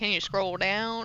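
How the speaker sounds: hushed, very quiet, put-on Southern drawl. Repeating another speaker's question in imitation: imitating a southern drawl. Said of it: "She got that southern drawl".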